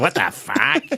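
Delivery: mock talking bird voice. Joking about how a raven would react, imitating a talking raven. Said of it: "The raven goes".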